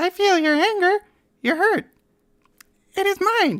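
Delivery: very high-pitched, squeaky put-on voice. Trying out a character voice on a line, in an attempted Elmo voice. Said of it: "Can I do an Elmo voice?".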